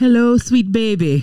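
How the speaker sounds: attempted Jamaican accent. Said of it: "It's supposed to be Jamaican".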